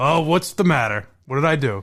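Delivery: flat, unenthusiastic put-on voice. Imitating the person about to be called answering the phone: imitating Dave Cullinane unenthused. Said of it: "he's so excited now".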